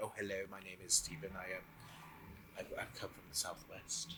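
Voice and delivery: whispered, terribly proper, posh well-spoken voice. Describing meeting certain people, the speaker acts out how he talks, in a put-on well-spoken voice. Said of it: "I go quite well spoken".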